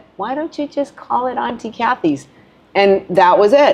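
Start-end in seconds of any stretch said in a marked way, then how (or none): 0.2-2.3 put-on tiny, high, squeaky little-girl voice. Retelling how an eight-year-old girl named Auntie Kathy's: high squeaky little voice. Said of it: "with her little high squeaky voice said".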